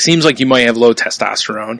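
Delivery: normal talking voice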